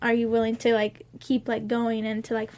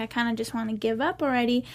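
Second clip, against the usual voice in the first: ordinary talk, nothing marked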